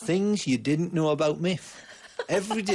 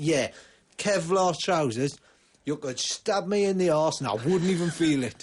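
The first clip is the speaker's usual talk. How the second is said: very loud, sudden, blurted-out words. Retelling your answer to a mate on a busy London street, in a very loud voice. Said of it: "in a very loud voice".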